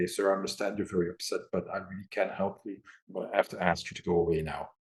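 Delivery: soft, calm and unbothered tone. Retelling replying to a man who screamed insults at him, retelling a calm reply. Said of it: "I just calmly said".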